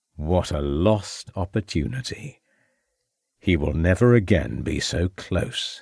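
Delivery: taunting, derisive, mocking and sneering voice. Reading fiction aloud, voicing a criminal taunting a woman: mocking voice. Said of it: "he said in a mocking voice".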